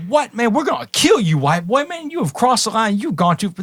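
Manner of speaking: put-on incredulous, high screaming. Recounting a basketball game, imitating the other guys screaming at him. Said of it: "screaming at me".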